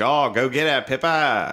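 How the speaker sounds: put-on Australian accent. Retelling a video where an australian man cheers on his dog: imitating an australian man. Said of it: "until you hear an Australian dude".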